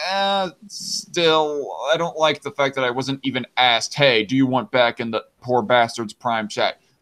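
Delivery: ordinary talk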